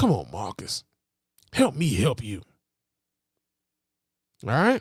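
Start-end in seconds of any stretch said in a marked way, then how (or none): 0.0-2.4 mock exasperated preacher voice, pitched lower. Acting out the pastor's words to Marcus: imitating a fed-up pastor. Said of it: "the pastor is sick and tired of this shit".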